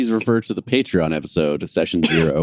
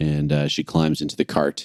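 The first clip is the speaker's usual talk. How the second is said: normal talking voice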